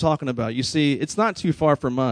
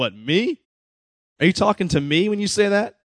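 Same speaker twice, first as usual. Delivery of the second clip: put-on, pitched-up, incredulous laughing delivery; 6 semitones higher than usual. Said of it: "you almost hear [name] laugh".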